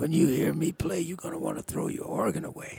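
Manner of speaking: high, raspy, rough voice. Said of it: "Jimmy's voice is, you know, raspy".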